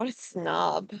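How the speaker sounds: quiet, muttered under the breath. Voicing a character as others get closer: muttering under breath. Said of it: "he kinda mutters under her breath".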